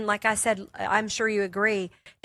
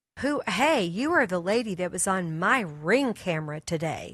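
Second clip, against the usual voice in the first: put-on stern, slow, severe, challenging young woman's voice; 2 semitones lower than usual. Retelling what a young woman neighbor said: imitating a stern young woman. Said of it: "she looked at me very sternly".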